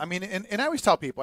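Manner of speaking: ordinary delivery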